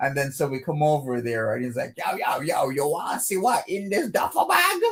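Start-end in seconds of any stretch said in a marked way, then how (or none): 2.0-4.8 put-on Jamaican accent, pitched up. Retelling a story of a man calling them over to his duffel bag, in a Jamaican accent. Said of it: "it's more like a Jamaican accent".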